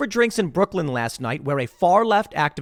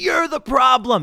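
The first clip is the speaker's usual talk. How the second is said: put-on yelling, high-pitched screaming; 9 semitones higher, 4 dB louder than usual. Retelling how a random guy screamed at an old man, imitating someone screaming. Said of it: "starts screaming at him like".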